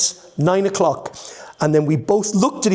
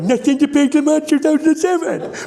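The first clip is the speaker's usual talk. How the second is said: very high-pitched put-on comic character voice; 10 semitones higher than usual. Recalling a car advert line, done in the Nigel voice. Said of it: "With this Nigel voice".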